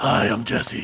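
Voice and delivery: hoarse, croaky rasp, worn-out, voice nearly gone. Retelling walking around years ago: imitating own lost voice. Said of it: "my voice when my voice went out".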